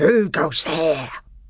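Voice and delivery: growled, snarling animal-like voice. Narrator reading two sentinel badgers challenging newcomers: snarling voice. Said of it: "asked in snarling voices".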